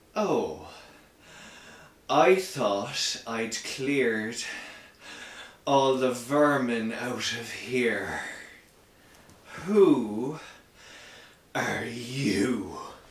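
booming, distorted voice with drawn-out "you". Narrating a scene, voicing a thin figure in a gas mask, distorted booming voice. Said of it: "this very distorted voice booms around the space".

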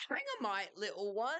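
whiny, high-pitched voice. A narrator reads a voice calling from back inside the pub, in a high-pitched whine. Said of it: "The high-pitched voice whined".

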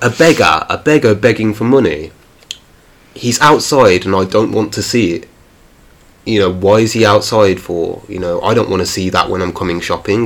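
ordinary delivery

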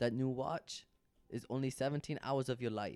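Arabic-accented voice.

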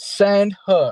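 acted, shrill, very high cheering scream. Retelling what they always scream when the wrestler comes out: imitating own screaming. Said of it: "I'm always screaming".

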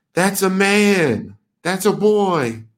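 high, very slow, drawn-out man's yell. Retelling a video clip where a woman yells: imitating a woman yelling. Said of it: "you just hear a cis woman yelling".

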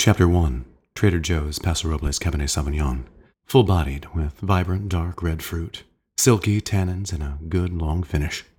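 audiobook-style storybook narrator voice. Asked to read a wine's tasting note aloud, the speaker uses an audiobook narrator voice. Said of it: "read it for us in your audiobookiest voice".

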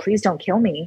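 on-your-knees begging, pleading voice. Retelling kneeling and pleading with an attacker: retelling a plea. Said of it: "I was just pleading with him".

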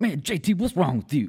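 high, loud calling out. Retelling what a coworker said while jerking his head: impression of Five Thousand. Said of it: "You do a great five K impression".

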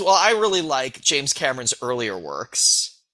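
ordinary delivery

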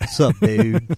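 cocky, swaggering big-shot rich-guy voice. Imitating how the Hunt Channel owner talks. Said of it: "That's what he talks like".

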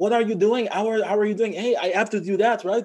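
put-on Quebec French accent. Discussing French accents, the speaker imitates a guy from Quebec: Quebec French-accented English. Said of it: "they talk like".

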